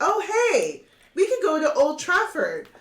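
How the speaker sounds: cheerful, high, loud, chirpy voice.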